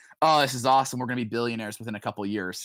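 plain

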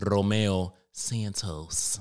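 Spanish accent first half, plain American second half. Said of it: "the first half's going to be Spanish and the second half's just going to be full on Caucasian".

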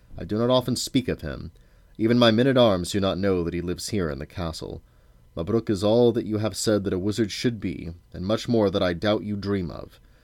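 plain

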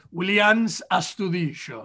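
Argentine Spanish pronunciation with Argentine accent. Saying a favorite player's name, williams astudillo, in an argentine accent. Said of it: "like in my Argentine accent".

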